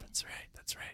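faint, very soft, voiceless whisper.

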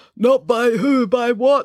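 slow, muffled, smothered through cloth. Reading a story, the injured character answers through a polo shirt, muffled through a shirt. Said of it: "His voice sounded muffled as it came through the polo shirt".

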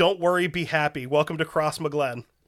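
ordinary talk

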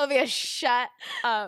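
loud mock outrage, wide swinging pitch, shouted.

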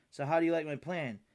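ordinary delivery

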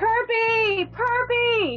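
shouting. Acting out what her character yells while being shocked, yelling Kirby. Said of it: "That's what I yell".

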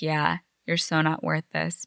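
ordinary talk, nothing marked

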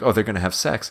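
normal talking voice

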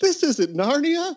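put-on, startled, shocked, high-pitched yelled outburst. Retelling a friend standing up in a theater during a violent opening scene: retelling a yell. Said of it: "stood up in the middle of the theater and yelled".

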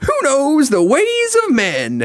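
very high, slow, swooping character voice, every word stretched. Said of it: "it's Jessie".

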